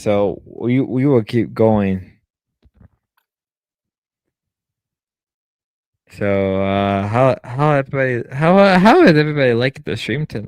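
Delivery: intoxicated-sounding speech. A streamer talks to viewers near the end of tonight's stream, drunk. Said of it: "I I am really intoxicated".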